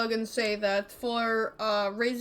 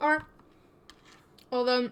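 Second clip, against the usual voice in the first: talking with food in mouth. Working out travel time with the others, talking with food in mouth. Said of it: "sorry, food in my mouth".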